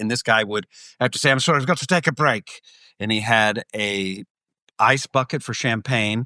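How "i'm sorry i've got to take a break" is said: worn-out, straining, overexerted voice. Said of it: "he is exerting himself in such an extreme way".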